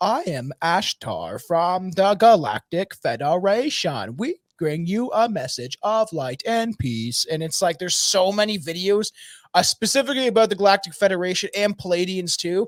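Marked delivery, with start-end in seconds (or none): 0.0-7.3 slow, synthetic text-to-speech robot voice. Describing galactic federation videos, imitating their narration in a robot voice. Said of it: "people with robot voices talking".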